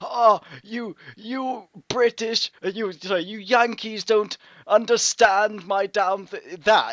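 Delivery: loud, shrill, very high, terrible fake British accent. Describing Foxy Grandpa, the speaker imitates his terrible British accent. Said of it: "he does this terrible British accent".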